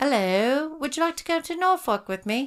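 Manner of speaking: slow, drawn-out, affected put-on British accent. After practicing how they say Norfolk, put-on British accent. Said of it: "sounded just like a British person".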